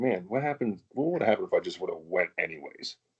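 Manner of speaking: usual speaking voice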